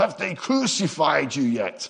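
put-on Scottish accent. Retelling a question a man's father asked him about leading a church, put-on Scottish accent. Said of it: "that was my Scottish".

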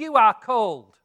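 very loud, booming, big-voiced shout. Speaker retells a voice interrupting a speaker during a talk; retelling a big shouting voice. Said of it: "this big this voice shout out".

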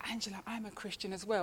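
soft, hushed half-whisper, very close. Retelling what a classmate said in her ear: imitating a half-whisper. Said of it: "she whispered in my ear".

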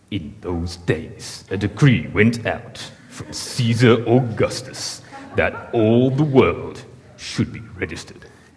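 slow, grand, dramatic epic-film narrator voice. Imagining how Hollywood would do the decree passage, dramatic Hollywood-style narration. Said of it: "Imagine if it was just Hollywood and how they would do it. It'd be like".

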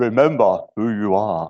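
deep, low, grave voice with gravitas. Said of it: "Can you say it in your best Mufasa voice?".

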